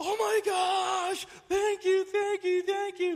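put-on overjoyed squeal, very high, very loud. Retelling how he opened a gift, imitating his excited gushing. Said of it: "he just gets so excited and he starts feverishly".

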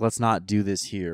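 ordinary talk, nothing marked

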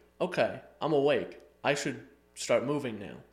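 ordinary talk

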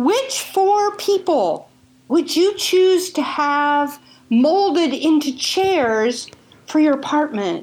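put-on excited gushing. Acting out how she called about a graduation gift; imitating her excited call. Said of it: "calling with so much excitement in her voice".

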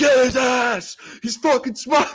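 acted, very high, loud, frenzied screaming. Recalling a room of 85 college kids, imitating them screaming. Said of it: "85 college kids screaming like".

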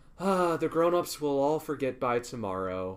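ordinary delivery

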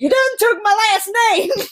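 play-acted very high, shrill, shrieking loud shout. Speaker recounts her roommate's reaction to having her hat stolen, retelling roommate's yell. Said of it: "she just yelled".

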